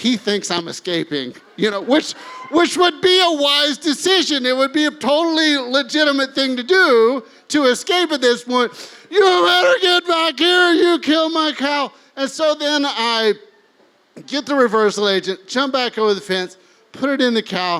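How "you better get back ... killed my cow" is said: furious angry scream, pitched high. Retelling the cow's owner screaming as he runs off; retelling a scream. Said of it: "He's screaming".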